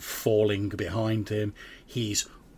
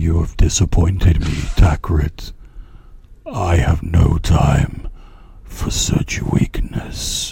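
deep, booming, loud voice; 4 semitones lower, 11 dB louder than usual. Retelling what a voice says to takrit in the story: deep booming voice. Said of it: "a deep booming voice".

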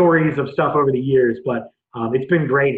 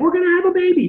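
thrilled, very high, excited shrieking scream. Speaker retelling how their wife screamed the baby news: imitating an excited scream. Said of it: "screams in excitement".

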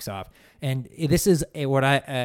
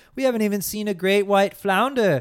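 bad, wildly off Irish accent, pitched up; 7 semitones higher, 3 dB louder than usual. Quoting a character's line from a film scene: terrible Irish accent. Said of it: "that was a terrible Irish".

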